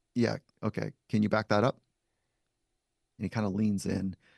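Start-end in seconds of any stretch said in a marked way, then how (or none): 0.1-1.7 unbothered, unimpressed, skeptical. Retelling a challenge put to a tough-looking man: imitating own unimpressed tone. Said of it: "and so unimpressed, I say to him".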